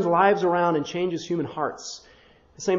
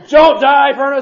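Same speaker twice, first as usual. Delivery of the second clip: full-throated, very loud holler, pitched up; 8 semitones higher, 10 dB louder than usual. Telling about praying over the furnace, the speaker reenacts yelling at it. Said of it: "I'm like yelling at the furnace".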